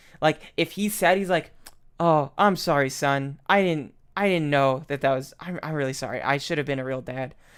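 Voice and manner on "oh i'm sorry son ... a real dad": wooden, flat monotone line reading. Mocking how he delivers all his lines, imitating flat monotone line reading. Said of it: "None of his lines have any diversity".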